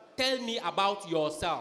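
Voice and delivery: ordinary talk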